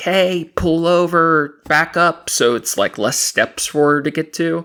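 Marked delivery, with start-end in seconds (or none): 0.0-2.3 full screaming, held back. Retelling a woman screaming at a driver to back up, retelling her full screaming. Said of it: "she's screaming like".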